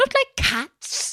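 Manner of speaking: very high, shrill, piercing, passionate cry. Narrator reading the Mouse's reply to Alice, in a shrill, passionate voice. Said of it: "in a shrill, passionate voice".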